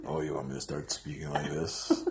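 exaggerated put-on deep voice, very quiet and hushed. Answering a co-host who likes the low voice: put-on low voice. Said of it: "I like that low".

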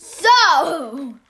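very loud, high-pitched shriek. Speaker screams while bringing up a movie they suggested, screaming. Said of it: "Why are you screaming?".

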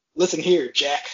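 agitated put-on elderly man voice. Imitating the president calling someone Jack: Joe Biden impression, riled up. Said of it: "when he's getting riled up about something, and he's like".

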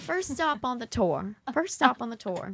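put-on Southern accent in a tour-guide voice. A speaker playing tour guide announcing the first stop, in a fake southern accent. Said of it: "Your southern accent's pretty good".

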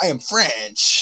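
stubborn, insistent delivery, repeated over and over. Quoting a movie cameo that keeps repeating a line: imitating Bruce Campbell's cameo. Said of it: "he just keeps going".

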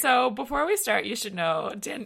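voice cracking mid-sentence. Starting to tell a podcast guest something before beginning: voice cracking. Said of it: "my voice is cracking".

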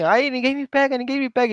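mock child voice, high-pitched shouting. Retelling how a boy on the court ran with the ball: imitating a kid shouting. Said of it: "começou co-, é, a gritar assim".

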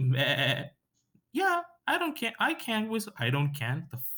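very high, swooping, bleating sheep voice. Retelling a funny video where a girl asks her friend Emma to whistle: imitating Emma's sheep-like voice. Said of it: "calls her friend who's like a fucking sheep".

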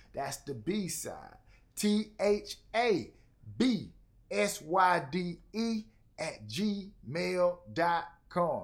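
slow deliberate delivery. Host asking listeners to send music, spelling out the email address, said slowly. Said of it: "I said that one slow right there".

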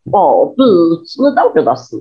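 slow character voice with words drawn out. Showing the old voice after being asked if it is still remembered: Geleia voice. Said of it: "ele faz a voz do Geleia".

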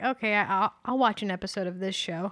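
plain

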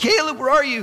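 high, anxious, frantic yelling. Retelling searching a crowd for a missing child: retelling yelling out a name. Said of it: "zigzagging like a crazy chicken".

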